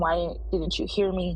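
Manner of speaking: ordinary talk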